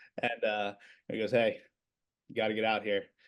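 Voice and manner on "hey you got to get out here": thick fake Philadelphia accent. Retelling a man knocking on the conference room door, imitating Joe Zuccarelli's Philly accent. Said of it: "he's got this thick, Rocky Balboa accent".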